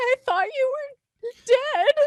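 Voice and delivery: very high, loud, hard sobbing. Narrating a character who runs over and hugs you, speaking her words sobbing. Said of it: "she's just like sobbing into your shoulder".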